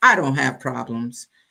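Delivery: nonchalant, unbothered tone. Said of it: "he was nonchalant".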